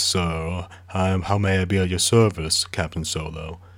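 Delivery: lazy, unhurried, slow and leisurely drawl. Describing a character's voice, doing Bollocks's leisurely drawl. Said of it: "he has like this leisurely drawl ... He talks like this".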